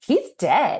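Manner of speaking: joyful, chipper, bright and cheerful. Retelling how a woman checked a man's pulse and announced it: mock-joyful DJ Tanner voice. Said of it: "Why did she say that so joyfully?".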